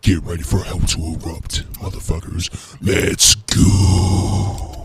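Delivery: deep voice, whispered and hushed. Speaking as a character inside a hack suit, deep voice. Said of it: "the deep voice with the suit".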